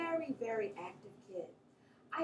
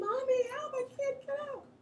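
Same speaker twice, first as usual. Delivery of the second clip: put-on high, loud crying plea, child voice. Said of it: "I'm crying".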